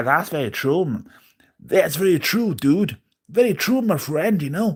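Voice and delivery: high, bad, put-on American accent. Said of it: "I can't do a shit American accent".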